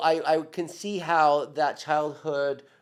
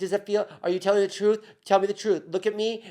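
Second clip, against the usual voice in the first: put-on anxious, worried tone, higher pitch; 4 semitones higher than usual. Imitating a partner who is scared of losing them: imitating scared, worried questioning. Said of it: "be scared of losing me".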